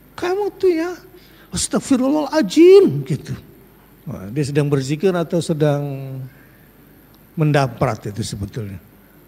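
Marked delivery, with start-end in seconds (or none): 0.1-3.0 very high, loud, angry scolding voice. Imitating a mother angry at her child, in a mock-angry scolding tone. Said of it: "Kayak ibu-ibu marah sama anaknya gitu kan".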